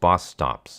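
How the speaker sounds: ordinary delivery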